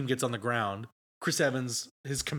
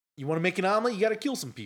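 put-on Boston accent; 6 semitones higher than usual. Asked by another speaker to redo a line in a boston accent: put-on boston accent. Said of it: "Do the eggs one in a Boston accent right now?".

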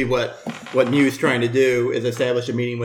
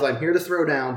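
ordinary delivery

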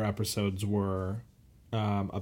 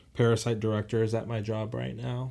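ordinary talk

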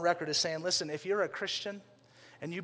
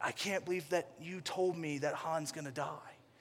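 imitated distraught, upset, angry man, quieter; 7 dB quieter than usual. Retelling how a stranger reacted to a movie spoiler: imitating a distraught angry man. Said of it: "so angry and upset at me and so distraught".

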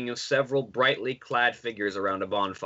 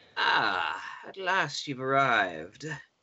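put-on dry, crackling old crone voice. A crone at a crystal ball greets a new arrival, crackling voice. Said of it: "her voice crackles like dry weeds".

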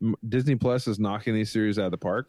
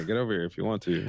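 mock lazy, uncaring delivery, quieter; 2 semitones lower, 4 dB quieter than usual. Joking about a lazy movie line: lazy, uncaring delivery. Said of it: "he's just lazy".

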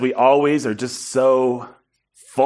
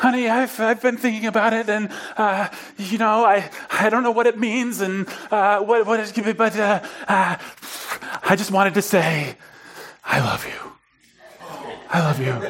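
mock-breathless, higher and slower; 7 semitones higher than usual. Speaker recounts a voicemail she left overnight, quoting it: retelling a breathless voicemail. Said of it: "it's this really breathless like".

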